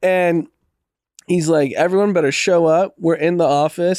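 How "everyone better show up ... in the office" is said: ordinary talk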